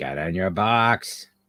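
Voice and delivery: slow, rough, gruff voice. Speaker imitates her aunt telling her boxer to get in its box: gruff voice. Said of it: "She had a really gruff voice too".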